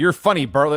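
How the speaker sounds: ordinary delivery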